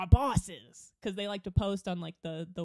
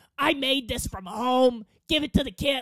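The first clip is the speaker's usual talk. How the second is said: unfriendly, loud, pitched-up put-on mean-lady voice; 5 semitones higher, 7 dB louder than usual. Retelling what a co-director said about a homemade treat, in her loud put-on voice. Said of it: "this is why she got that voice".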